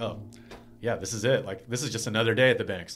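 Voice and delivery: plain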